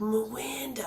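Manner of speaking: put-on speaking with a Brooklyn accent. Imitating how Steve from the show says Miranda. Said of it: "the way he says Miranda".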